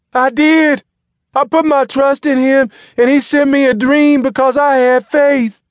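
very high, shrill, loud crying out. Suddenly on her feet at the service, Alberta answers Sweet Prophet, crying out. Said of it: "she cried, arms upraised".

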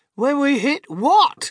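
piercing, very high, drawn-out crying out. The group answers mr. wonka together, crying out. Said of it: "they cried".

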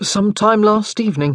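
rather sheepish, slightly high, embarrassed-sounding voice. Joshua answers his grandmother's question, admitting it sheepishly. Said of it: "he admitted rather sheepishly".

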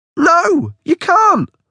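very high, frantic, panicked crying voice. Reading a story, Tom protests as Delia takes his cereal, panicking. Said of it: "I say, panicking".

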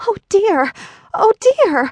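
very high, dismayed outcry. Someone sees two feet sticking out under a fallen house, crying out in dismay. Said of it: "cried Dorothy, clasping her hands together in dismay".

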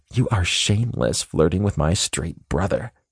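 stage whisper, attempted hushed whisper. Reading the sister's line about her brother: trying to whisper. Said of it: "I hear my sister try to whisper".

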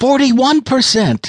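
shout under strain, pitched very high. A character calls out as the narrator steadies a revolver, strained shout. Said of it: "Gorgio's strained voice shouted".

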